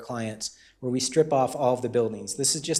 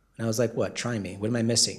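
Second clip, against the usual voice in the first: normal talking voice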